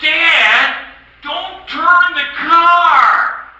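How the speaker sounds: put-on high, slow, loud little boy's shout.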